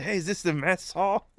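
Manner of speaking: out-of-breath, very high, puffing voice. Retelling a movie scene of stepping off a bus: out-of-breath John Candy impression. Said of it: "he's all out of breath and shit. He's like".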